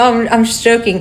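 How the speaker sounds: usual speaking voice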